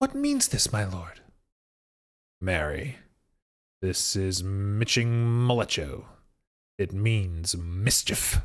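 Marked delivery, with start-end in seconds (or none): 2.4-8.4 unrehearsed reading, much lower. In a cold reading of Hamlet, the prince answers a question: Hamlet in a cold reading. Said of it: "What should a man do but be merry? / Cold reading Hamlet by William Shakespeare".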